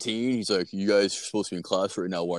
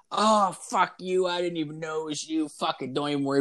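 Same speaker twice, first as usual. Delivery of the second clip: put-on drunken woman's voice, pitched up; 7 semitones higher than usual. Retelling what a drunk girl at a party said: imitating a drunk girl. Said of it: "so drunk".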